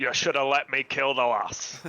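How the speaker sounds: loud, poor, put-on Scottish accent. Voicing the character the others are discussing: bad scottish accent. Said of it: "he has a bad Scottish accent".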